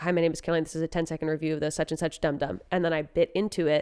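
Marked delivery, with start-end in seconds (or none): 0.0-2.6 acted, bone-dry, flat, rattled-off deadpan. Retelling her own filmed ten-second candy review, retelling a deadpan delivery.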